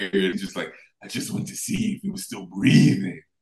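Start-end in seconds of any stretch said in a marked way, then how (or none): 1.0-3.1 gravelly, put-on wrestler voice. Retelling a wrestler's creepy line over a body: gravelly Jake the Snake voice. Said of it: "that gravelly Jake the Snake voice".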